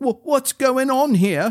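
very high, frightened, fearful calling out. A narrator reads Malady's line as the group is lost in the mist; fearful voice. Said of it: "called Malady in a fearful voice".

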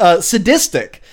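ordinary delivery

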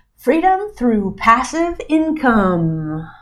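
very slow delivery, the word "income" stretched out. Podcast host introducing the show's name to listeners: super slow. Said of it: "I said that super slow".

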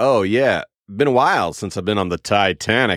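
dry, mocking, sarcastic tone. Showing the phrase used with a sarcasm filter: sarcastic tone. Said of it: "with a sarcastic tone of like".

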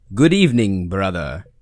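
put-on vampire count voice. [name] answers his brother's greeting at the start of their show; Dracula voice. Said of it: "Was that Dracula?".

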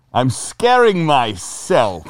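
put-on spooky skeleton voice. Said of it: "You do a very good Jack Skellington voice".

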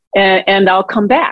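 ordinary talk, nothing marked

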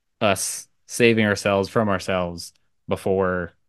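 ordinary talk

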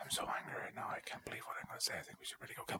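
fake hushed whisper. Spoofing a Godzilla movie scene, doing Kyle whispering and mumbling. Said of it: "He does so much whispering".

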